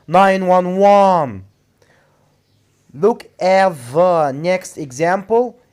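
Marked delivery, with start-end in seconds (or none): 0.1-1.4 last "one" in "nine one one" emphasized. Pronunciation lesson on saying numbers, stress on final one. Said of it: "You have to put the stress on the last syllable, which is one".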